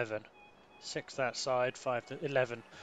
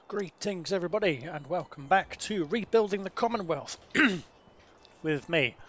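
hoarse, croaky, raised voice; 5 semitones higher, 5 dB louder than usual. Host opens the episode right after a mouthful of coffee, croaky voice. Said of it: "with a croaky voice".

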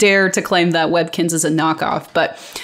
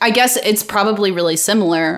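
ordinary talk, nothing marked

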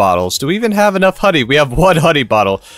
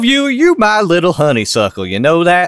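slow, laid-on, put-on southern US accent. Kentucky-born speaker joking around, switching into a fake southern accent. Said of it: "I'm allowed to fake a southern accent".

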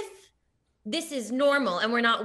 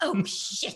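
put-on fancy British accent, carefully enunciated. Retelling how mom said swear words: imitating a british accent. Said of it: "she would say them in a British accent".

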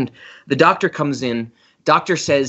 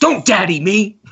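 put-on furious scream, high-pitched; 6 semitones higher, 3 dB louder than usual. Recalling the best line of a movie, imitating J.K. Simmons screaming. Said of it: "screaming at his daughter in the hospital".

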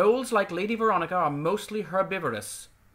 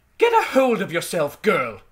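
severe, stern, raised, swooping duchess voice; 8 dB louder than usual. The Duchess tells off Lady Veronica after her scream, stern. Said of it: "said the Duchess sternly".

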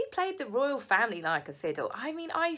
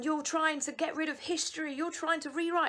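mock high-pitched shrieking shout. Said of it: "screaming and shouting, going".

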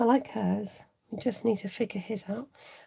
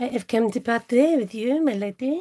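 put-on terrible comic French accent; 4 dB louder than usual. Trying a line for someone who looks French, terrible comic French accent. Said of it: "that's a terrible French accent I've just pulled off. But that's a very kind of comic French accent".

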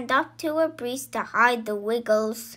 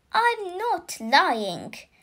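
protesting at once, pitched up; 5 semitones higher than usual. Accused of lying, she answers back, protesting. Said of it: "protested Zoe".

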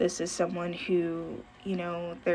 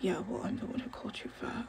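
put-on evil mumble under breath, quieter; 3 semitones higher, 5 dB quieter than usual. Describing a guy at the back of the stage, mimic his evil mumble under breath. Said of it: "mumbling under his breath, like, the most evil".

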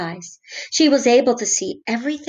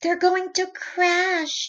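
high, gasped out on a catch; 9 semitones higher than usual. Stellaluna watches her friends, who cannot see, gasping. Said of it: "gasped Stellaluna".

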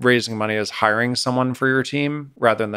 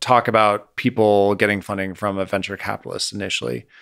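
plain

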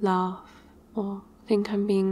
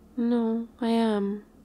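pouty, sulky, insistent tone; 2 semitones higher than usual. Talking to someone after coming home from a stressful job, pouty.

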